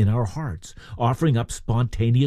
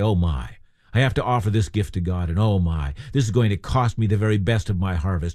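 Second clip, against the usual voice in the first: low, reluctant, begrudging grumble. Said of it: "It's not a time to begrudgingly say".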